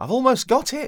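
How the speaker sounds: thrilled exclamation, pitched way up. A character pulling a fish onto the riverbank exclaims excitedly. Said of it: "Wiggle exclaims excitedly".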